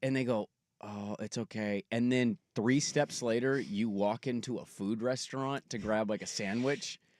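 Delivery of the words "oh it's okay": put-on sad, dejected voice, quieter and slower. Acting out a stranger's reply after being refused cash: mock-sad voice. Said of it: "doing it in a perfectly sad voice".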